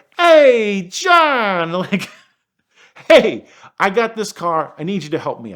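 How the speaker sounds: put-on New York Queens accent. Retelling a phone call from the owner's daughter: imitating a Queens accent. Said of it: "the most delightful Queen's accent comes bellowing through the phone".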